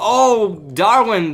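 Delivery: mock exclamation, high, loud cry.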